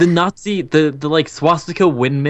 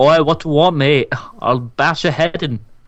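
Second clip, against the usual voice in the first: terrible, bad put-on British accent. Playing a bunch of angry British people, the speaker does a terrible British accent. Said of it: "all of our terrible British accents".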